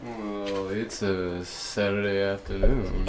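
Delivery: very low, smooth jazz radio announcer voice. Mimicking how the smooth jazz guy always talks: smooth jazz guy voice. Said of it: "with the smooth jazz, he always like".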